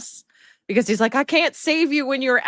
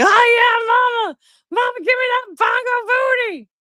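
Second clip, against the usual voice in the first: very high, loud cat voice with drawn-out yeah; 13 semitones higher, 5 dB louder than usual. Retelling how the cat reacts to a flank smack: voicing the cat. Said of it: "he's just like".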